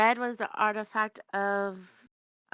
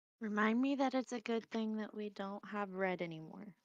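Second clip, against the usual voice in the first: very quiet, soft grumbling muttered under the breath; 10 dB quieter than usual. Speaking in character, muttering to themself under their breath. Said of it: "I'm just muttering to myself under my breath".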